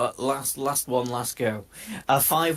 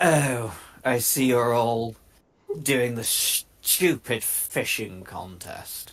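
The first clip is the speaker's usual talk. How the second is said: put-on slightly slurred elderly man voice, slower; 2 semitones lower than usual. Narrator voicing an elderly gentleman at a fishing contest, slightly slurred elderly man. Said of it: "he's slightly slurring his words".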